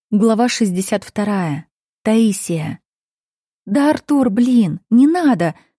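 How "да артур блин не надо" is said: hoarse, raw, agitated, nervous cry. The narrator cries out while pushing a man away, hoarse nervous cry. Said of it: "вскрикиваю осипшим от волнения голосом".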